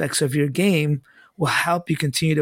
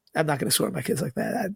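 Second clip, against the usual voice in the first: usual speaking voice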